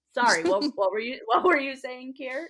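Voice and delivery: mock loud, cracking up, laughing while speaking. Imagining a character apologizing in a meeting: imitating someone cracking up. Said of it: "cracking up".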